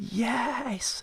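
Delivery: high-pitched, breathy, excited whisper.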